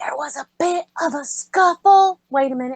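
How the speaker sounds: high, theatrical, half-voiced stage whisper. Looking back at the others, a character speaks in a stage whisper. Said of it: "kind of like stage whispers like".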